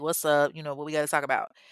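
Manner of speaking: put-on chill, relaxed, laid-back manner. Retelling a man's reply to a woman at a party, mimicking a chill reply. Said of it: "he's all chill".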